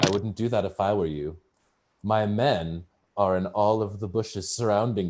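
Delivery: dry, knowing, very wry delivery. Voicing an NPC warning the party about his men: wry voice. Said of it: "he says very wryly with a wink".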